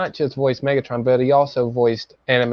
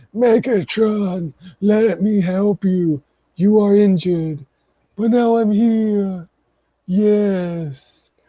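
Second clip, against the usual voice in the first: put-on elderly man's voice, very slow, drawn-out yes, pitched up; 8 semitones higher than usual. Complaining about a character's voice, the speaker shows how it sounds, old man voice. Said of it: "it sounds like an old man".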